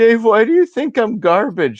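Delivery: put-on very high, wounded, hurt, emotional voice. Retelling how the man he was yelling at answered, imitating him getting emotional. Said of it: "he got emotional".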